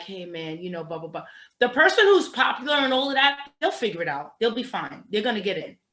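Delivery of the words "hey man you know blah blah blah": very quiet, barely there, confiding half-whisper. Acting out a quiet person asking for money, imitating someone half-whispering. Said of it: "kinda whispering to you".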